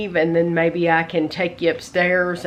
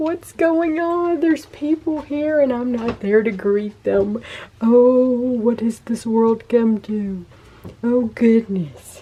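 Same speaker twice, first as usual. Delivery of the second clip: high, put-on cat voice; 6 semitones higher than usual. Voicing a shut-in cat's complaint about people in the house: voicing the cat's thoughts. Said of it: "He's like".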